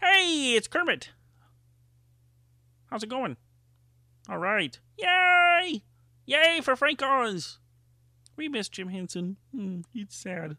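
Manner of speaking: very high pitch with the "yay" stretched out. Doing Muppet and Sesame Street voices as a tribute; Kermit the Frog voice. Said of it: "I'm going to do some of the Muppet and Sesame Street voices I do".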